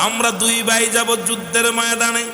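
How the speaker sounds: put-on high, slow, pleading crying like boys.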